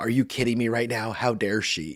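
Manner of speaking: distressed, put-out, visibly upset outburst. Retelling a childhood moment, imitating being visibly upset. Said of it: "I was just visibly upset".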